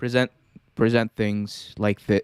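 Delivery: very low, toned-down, flat droning monotone. Demonstrating a completely toned-down version of oneself presenting, monotone. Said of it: "talking monotone".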